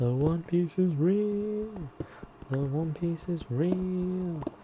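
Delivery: silly put-on voice, high and slow.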